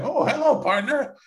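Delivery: very high, cartoonish character voice. Acting out a plane pilot greeting a passenger: Yosemite Sam voice. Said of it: "it's as Yosemite Sam".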